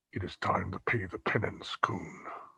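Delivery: hushed, very quiet whisper under the breath. Narrating a game scene as a character readies his blade, whispering to himself. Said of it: "he sort of whispers to himself".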